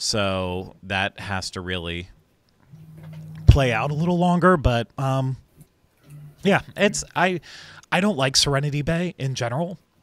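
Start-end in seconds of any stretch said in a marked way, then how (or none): 6.7-9.8 emotional, choked up, voice catching, pitched higher. Talking on camera about serenity bay, getting choked up. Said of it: "I'm getting all choked up about it".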